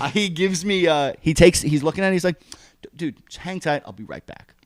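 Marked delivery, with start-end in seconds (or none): 2.8-4.4 put-on calm, soft, easygoing officer voice. Retelling a traffic stop, imitating the trooper's calm voice. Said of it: "Like that voice".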